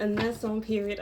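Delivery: plain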